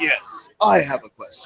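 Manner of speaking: heroic robot voice. Retelling a fan at a panel asking one more question, in Optimus Prime voice. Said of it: "it's clearly Optimus Prime's voice".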